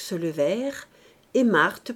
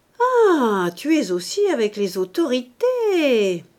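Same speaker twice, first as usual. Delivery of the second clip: slow, jeering, teasing, mocking sneer; 4 semitones higher, 5 dB louder than usual. Mouret jeers at Marthe when the mayor asks to speak with her, sneering mockingly. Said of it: "ricana Mouret de son air goguenard".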